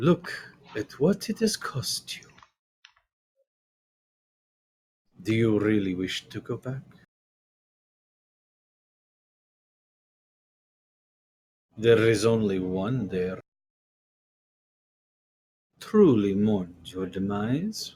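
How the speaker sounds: near-purring voice laced with command. Narrator reads a female character's line to another character: almost a commanding purr. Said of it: "says with a commanding purr almost in her voice".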